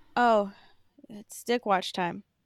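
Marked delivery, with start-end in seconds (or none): 1.0-2.2 slow, reluctant, unexcited tone. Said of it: "don't sound so fucking excited about it".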